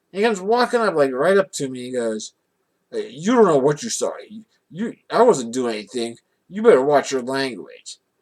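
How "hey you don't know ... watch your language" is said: put-on intimidating, menacing male voice. Recounting a man walking right up to them, acting out an intimidating man. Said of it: "like he's going to intimidate me".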